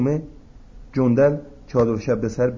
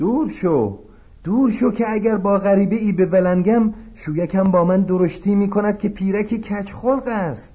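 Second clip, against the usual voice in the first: put-on high-pitched elderly woman character voice; 8 semitones higher than usual. A narrator reads a character's line, spoken in an old woman voice. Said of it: "جندل با صدای پیرزن".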